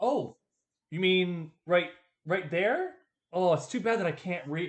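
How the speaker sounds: mock casual, laid-on, played-up feigned cluelessness. Retelling a character's words to a merchant: imitating feigned dumbness. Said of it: "she's like pretending, she's like playing up her dumbness".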